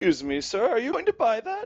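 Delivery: clumsy, very high put-on teenage girl voice. Narrator voicing a girl who addresses a player's character, bad teenage girl voice. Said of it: "I can't do teenage girl voice".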